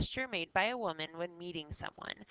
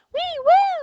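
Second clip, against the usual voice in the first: very high, very loud, shrill chorus cry; 15 dB louder than usual. Explaining the word shrill, acting out the mice crying in chorus, shrill and high-pitched. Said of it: "they're all very high pitched and loud".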